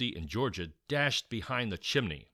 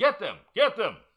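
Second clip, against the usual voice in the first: very high, shrill, loud screaming; 12 semitones higher, 8 dB louder than usual. A man heard from the attic as the children hide: screaming. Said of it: "She could hear the man screaming".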